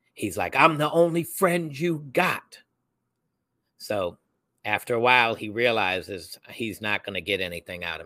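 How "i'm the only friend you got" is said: hard, high-pitched, loud screaming yell. Retelling how a man screamed at him while he stayed silent, retelling someone screaming. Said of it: "he's screaming at me".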